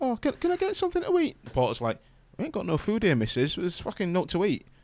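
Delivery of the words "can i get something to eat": tiny, small little voice. Retelling asking for something to eat: small little voice. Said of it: "in a little voice".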